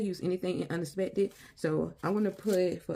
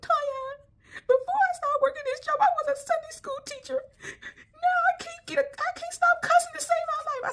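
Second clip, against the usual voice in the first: very high, weepy, crying whine; 4 dB louder than usual. Retelling a woman's story about her job, imitating a whiny voice. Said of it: "she always whining and like she always upset".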